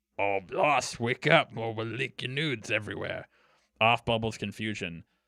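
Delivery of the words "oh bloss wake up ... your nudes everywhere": unconvincing put-on Cockney accent. Voicing a character in the story, in an attempted cockney accent. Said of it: "like I'm thinking like like Cockney".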